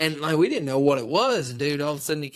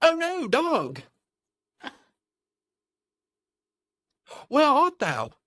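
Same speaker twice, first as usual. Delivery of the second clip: bad, over-the-top fake British accent, very high pitch; 12 semitones higher than usual. Picturing men out there carrying muskets, put-on British accent. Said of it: "I don't have a British accent".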